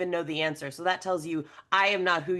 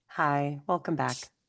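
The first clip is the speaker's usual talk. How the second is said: calm guided meditation voice; 3 semitones lower than usual. Greeting after a break: guided meditation voice. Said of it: "you literally have a voice that says".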